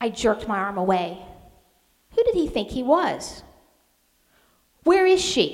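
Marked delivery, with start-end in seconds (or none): 4.8-5.5 very high, loud, curt snapping. Narrator reads a man's line to the narrator, snapped. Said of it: "he snapped at me".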